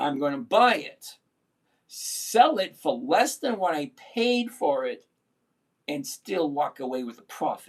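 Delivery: slow, deliberate, step-by-step delivery. Explaining a trade again to viewers, said slower. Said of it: "Let me say it slower".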